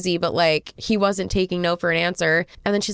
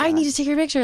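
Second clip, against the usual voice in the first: insistent, creepy, pushy voice, pitched up; 6 semitones higher than usual. Retelling how a photographer insisted on taking a photo: imitating a pushy man. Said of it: "very pushy".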